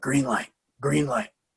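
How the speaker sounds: quiet, hushed half-whisper. Retelling what a trainer half-whispered to his top students in the gym: imitating someone half-whispering. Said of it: "he would kinda whisper".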